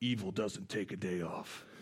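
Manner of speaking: low, hushed, brooding superhero voice. Speaker quoting what Batman says in comic books: Batman voice. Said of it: "I've got a real good Batman voice".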